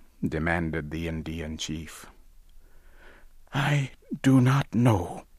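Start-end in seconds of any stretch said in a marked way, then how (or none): 3.5-5.1 whispered, much higher. A man answers the chief who demanded where his god is: whispered. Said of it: "Owen whispered".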